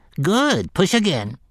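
mechanical, machine-like talking voice, slightly high. Narrator reads a voice encouraging the gunslinger to push the handcar, mechanical voice. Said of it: "the mechanical voice encouraged".

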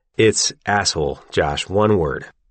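usual speaking voice

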